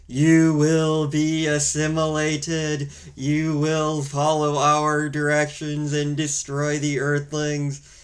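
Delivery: cold, emotionless, robotic evil alien drone voice. Describing an alien speaking in a movie the speaker watched, typical evil alien voice. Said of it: "typical, like, evil alien, like, voice where it's like".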